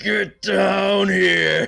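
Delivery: roaring dragon-like bellow. Voicing a character who calls everyone downstairs: dragon bellow. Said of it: "He bellows".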